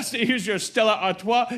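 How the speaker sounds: put-on French-accented delivery. Retelling what the woman who took the order said, in a french accent. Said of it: "She did like a French accent".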